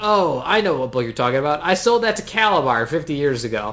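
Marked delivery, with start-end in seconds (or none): none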